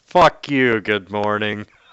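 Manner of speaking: thundering, loud, booming voice. Imagining a voice from the clouds over the crater, in a booming voice. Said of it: "you hear this booming voice from the clouds".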